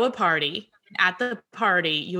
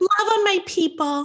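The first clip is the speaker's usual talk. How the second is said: very high-pitched teasing mimicking voice; 12 semitones higher, 3 dB louder than usual. Doing an impression of the other speaker answering the question: impression of the other speaker. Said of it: "This is my impression of you".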